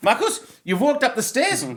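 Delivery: very high, loud put-on German accent. Retelling what was said after passing a test: German accent. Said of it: "again, German accent".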